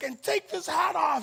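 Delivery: mock furious, going off. Telling a story about their mom grabbing their hat: imitating mom flipping out. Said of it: "she's like flipping out".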